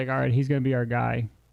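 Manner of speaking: ordinary delivery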